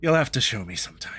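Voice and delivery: amused chuckle while talking. The narrator voices Evelyn replying to a player, chuckling while speaking. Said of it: "She kind of chuckles and is like".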